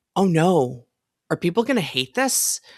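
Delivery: mock worried tone. Recalling the weeks before an announcement about an update, retelling own past worry. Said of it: "but I'm now worried".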